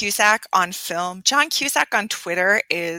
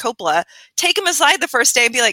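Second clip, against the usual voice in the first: ordinary talk, nothing marked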